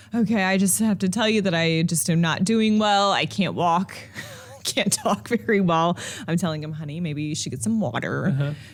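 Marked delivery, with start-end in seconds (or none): 0.1-5.9 put-on drunk voice, slower. Retelling a phone call from a man too drunk to speak, imitating a drunk man. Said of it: "he is so drunk he can hardly speak".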